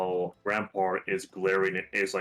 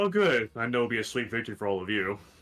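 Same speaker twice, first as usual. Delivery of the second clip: lightly chuckling, soft chuckle while speaking; 2 semitones higher than usual. A game master voices a server greeting the Candy Crew, with a light chuckle. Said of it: "she chuckles lightly and says".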